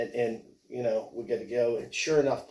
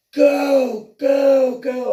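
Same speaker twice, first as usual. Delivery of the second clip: shrill, very high, very loud, drawn-out furious yelling; 13 dB louder than usual. Telling a story about a man on the water screaming at him, retelling an infuriated scream. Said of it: "he's infuriated".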